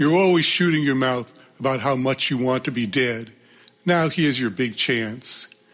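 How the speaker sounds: plain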